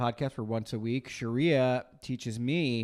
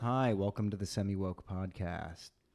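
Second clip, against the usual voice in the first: soft put-on public-radio host voice, lower and quieter; 3 semitones lower, 4 dB quieter than usual. Opening the podcast episode in a soft NPR voice. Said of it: "came in real soft with the N P R voice".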